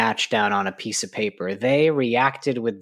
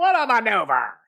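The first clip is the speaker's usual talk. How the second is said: high-pitched ring announcer style call; 12 semitones higher than usual. Imitating a wrestling announcer's call: Vince McMahon announcing voice. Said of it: "that's Vince's announcing voice".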